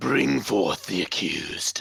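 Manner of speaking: deepest put-on voice. Friends ask who can do the deepest voice; trying a line in a very deep voice. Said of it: "do the deepest voice?".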